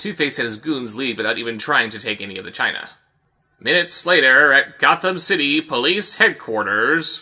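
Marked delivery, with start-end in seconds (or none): 3.6-7.2 slow, comic announcer-style narrator voice. Recapping a Batman comic, voicing a narration box in narration-box voice. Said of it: "I am doing that voice every single time there's a narration box".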